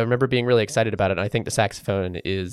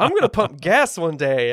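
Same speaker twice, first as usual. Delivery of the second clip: mock drunken speech, pitched higher; 7 semitones higher than usual. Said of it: "very clearly drunk".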